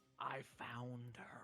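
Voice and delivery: maximally eerie, unsettling, creepy delivery. Voicing a character who has found someone: said as creepily as possible. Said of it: "he says that as creepily as possible".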